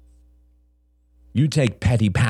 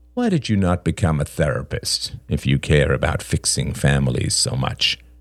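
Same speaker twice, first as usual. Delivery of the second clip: usual speaking voice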